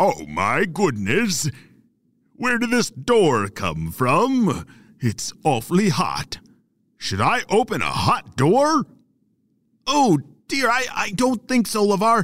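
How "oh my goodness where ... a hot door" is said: chatty, unhurried dragon voice. Storyteller voicing the dragon at a closed cave door, LeVar the lava dragon voice. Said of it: "[name] was known for talking a lot, and he didn't always hurry when he should. / [name] was known for talking a lot, and he didn't always hurry when he should. But [name] was really hoping that he wou".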